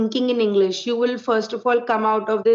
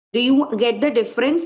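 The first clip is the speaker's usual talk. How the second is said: normal talking voice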